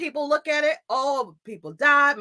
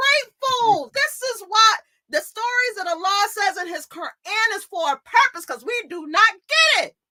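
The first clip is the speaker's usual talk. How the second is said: heated, passionate, high-pitched, worked-up outburst; 6 semitones higher than usual. Speaker discussing a story from the Quran, yelling passionately. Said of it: "I'm sorry, I'm yelling".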